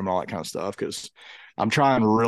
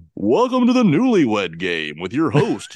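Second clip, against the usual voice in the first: slow, loud game show announcer voice. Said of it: "give me your best".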